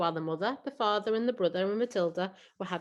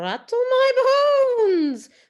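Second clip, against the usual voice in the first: very high-pitched, very loud, shrill, booming eerie voice; 12 dB louder than usual. A parrot, asked what else it can say, answers in a spooky voice. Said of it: "giving a wonderful imitation of a spooky voice".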